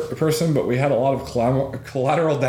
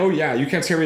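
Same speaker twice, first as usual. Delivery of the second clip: plain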